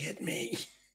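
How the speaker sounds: breathy whisper, very close, right into the ear. Voicing a captor who grabs someone and whispers in her ear: whispering in character. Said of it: "He just kinda whispers in her ear".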